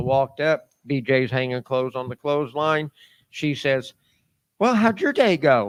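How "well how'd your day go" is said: mock bright, bubbly, joyful cheery tone. Retelling a greeting from someone hanging clothes: imitating BJ's cheery bubbly voice. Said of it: "All cheery and bubbly like joy".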